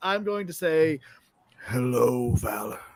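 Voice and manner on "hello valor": distorted, warped voice. Speaking telepathically to Valor as the hammer spirit: distorted telepathic voice. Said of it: "if I can distort my telepathic voice".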